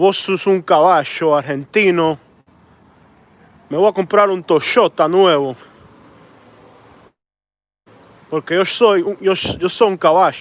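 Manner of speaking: Argentine-accented Spanish delivery. Showing how Argentinians pronounce Spanish, in an Argentinian Spanish accent. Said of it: "But in Argentinian".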